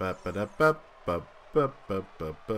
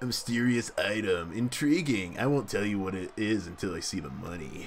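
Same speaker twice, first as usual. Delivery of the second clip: put-on hippie character voice. Playing a game, the speaker voices a merchant who looks like a hippie in a hippie voice. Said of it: "so I could give him a hippie voice".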